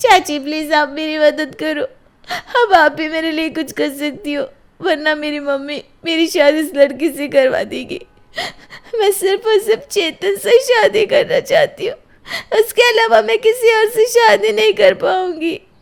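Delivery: tearful pleading voice. Pleading with the aunt for help: crying while pleading. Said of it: "रो मत वंदना".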